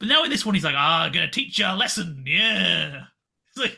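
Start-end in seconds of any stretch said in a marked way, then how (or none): 0.8-2.2 mock old-timey twenties gangster voice. Describing an evil teacher character who turns gangster: old-timey gangster voice. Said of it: "becoming an old timey gangster".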